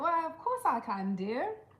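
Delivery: put-on, swooping, sing-song British accent. Asked if they can put on a British accent, answering in a British accent. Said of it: "Can you put on a British accent?".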